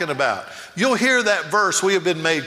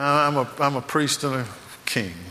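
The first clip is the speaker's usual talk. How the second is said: mock weak delivery without conviction; 4 semitones lower, 4 dB quieter than usual. Speaker imitates how the audience repeated the line: imitating a weak, unconvinced reply. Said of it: "y'all didn't say that with a lot of conviction. I heard".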